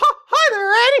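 squeaky high cartoon mouse voice. Retelling playing with a child who said you're Mickey: Mickey Mouse voice. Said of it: "I have a decent Mickey Mouse".

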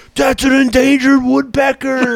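mock scolding scream, very high and shrill. Retelling how a friend's dad reacted to a shot bird: imitating someone screaming. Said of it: "my friend's dad screamed at me".

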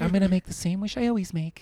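put-on sweet girly voice. Retelling what a woman said, imitating a cute girly voice. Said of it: "She said it like a cute chick".

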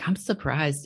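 put-on stock dumb, stupid-sounding voice. Quoting people surprised that he listens to heavy stuff, in stock stupid voice. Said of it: "this is just my stock, stupid, you know, voice".

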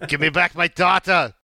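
put-on angry, high Austrian accent. Quoting a movie hero's angry demand: Arnie accent, mock-angry yell. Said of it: "I did that in an Arnie accent".

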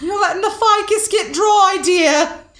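very high, loud squeaky delivery. Podcasters doing a psychic bit, relaying a message from Aunt Gertrude: Aunt Gertrude voice. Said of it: "why are we doing so many voices?".

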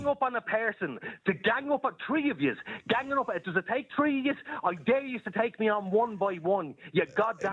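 speaking angrily. On air, right after being asked why they're so angry, speaking angrily. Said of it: "Why are you so angry?".

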